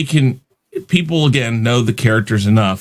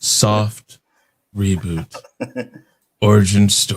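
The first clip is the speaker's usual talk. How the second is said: put-on sultry, seductive come-on voice; 3 semitones lower than usual. Repeating a phrase as a joke: mock seductive voice. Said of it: "If I say it more seductively".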